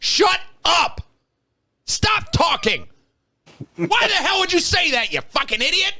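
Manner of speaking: put-on, very high-pitched, furious, angry shout. Recalling a moment while editing, retelling yelling at oneself. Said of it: "I'm yelling at myself".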